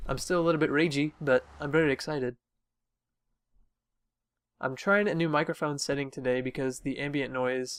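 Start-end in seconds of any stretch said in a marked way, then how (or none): none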